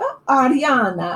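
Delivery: put-on Italian-accented speech. Retelling how an older lady repeats a name: imitating Marlene's Italian accent. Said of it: "in that, you know, Italian accent".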